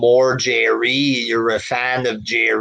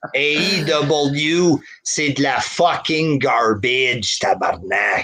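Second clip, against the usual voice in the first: French accent with a drawn-out W; 2 semitones higher than usual. Answering a chat request to say garbage in his accent: saying it in his French accent. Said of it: "That's how I'd say it".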